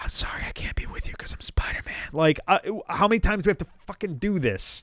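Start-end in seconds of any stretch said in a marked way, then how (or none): 0.0-2.1 very soft, breathy whisper, leaning in close. Mocking an imagined graveside line: imitating Peter whispering. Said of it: "lean over the gravestone and whisper".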